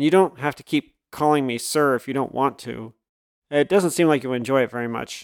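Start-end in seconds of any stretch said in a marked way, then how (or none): none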